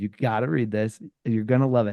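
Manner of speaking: normal talking voice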